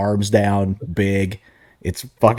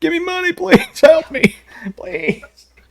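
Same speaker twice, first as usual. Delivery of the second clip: sobbing, pleading wail, very high pitch; 4 dB louder than usual. Retelling a crying plea for money, mock crying as Rob Bartlett. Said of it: "Rob Bartlett crying like a bitch".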